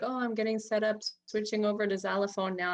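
ordinary talk

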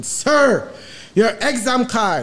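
put-on voice at top volume. Retelling a man demanding an exam card again, retelling him shouting. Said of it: "the man decides to get on top of his voice".

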